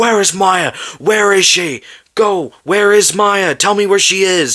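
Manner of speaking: high-pitched, play-acted, demanding screaming. Retelling a horror film scene where a character confronts the killer: imitating a character screaming. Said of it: "He starts screaming and he's like".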